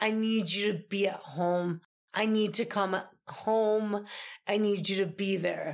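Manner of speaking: mock-calm, acted calm voice. Retelling what he said when she offered to come, imitating his calm voice. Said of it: "he just calmly says no to me".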